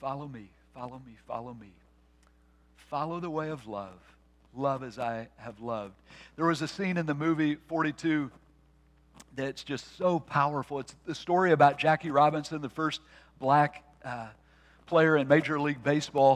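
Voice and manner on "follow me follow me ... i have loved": imitated whisper, lower and quieter. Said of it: "what's he whisper?".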